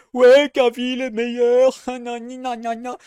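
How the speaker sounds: mocking, whiny put-on voice. Mocking what haters will say online: mocking a hater's whiny voice. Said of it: "c'est un rageux".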